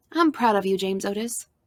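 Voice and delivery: plain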